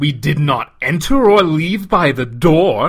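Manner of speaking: very loud, scornful, derisive scoff. Gar answering another's suggestion, scoffing. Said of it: "he scoffed".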